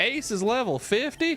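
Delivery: Southern American accent slipping out, slightly high. Playing Pokémon, repeating a line in a Southern US accent. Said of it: "came out with a southern accent".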